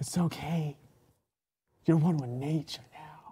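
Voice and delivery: hushed whisper. Kneeling beside a dead body and brushing his hair, whispering in his ear. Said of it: "I'm like whispering in his ear".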